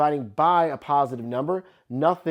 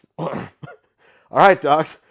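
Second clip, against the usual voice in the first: very loud shout with voice breaking; 3 semitones higher, 8 dB louder than usual. Signing off a lesson video to viewers, voice cracking. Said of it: "That was a nice voice crack".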